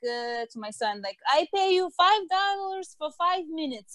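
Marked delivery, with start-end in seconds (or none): 1.3-3.9 put-on Eastern European accent, much higher. Quoting the speaker's mother offering her grandson money to talk, eastern european accent. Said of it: "when it's an Eastern European accent".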